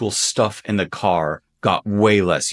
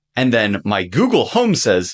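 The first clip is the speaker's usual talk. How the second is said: plain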